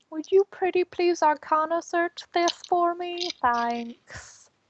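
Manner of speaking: overdone pretty-please tone. A player has their character ask someone to search an item, asking very nicely. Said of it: "Ask nicely".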